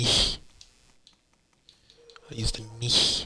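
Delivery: slow, fake German accent, best attempt. Naming an item just used in the playthrough: put-on German accent. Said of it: "Using my best German accent there".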